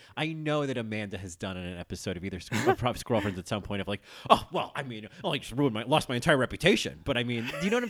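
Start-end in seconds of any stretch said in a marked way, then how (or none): 4.2-7.4 loud, scoffing, dismissive, raised voice. Quoting a favorite line from a fight: scoffing Alyssa Edwards impression. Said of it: "It's that kind of scoffing".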